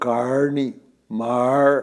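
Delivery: put-on caipira accent, rural Brazilian countryside sound. Recalling being mocked in Rio for how he spoke: caipira accent. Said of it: "eu era um caipira".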